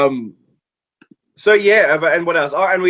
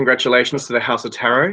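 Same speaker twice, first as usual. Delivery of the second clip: normal talking voice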